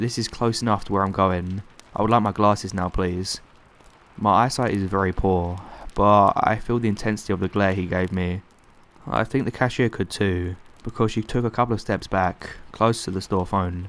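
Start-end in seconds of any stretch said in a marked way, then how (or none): none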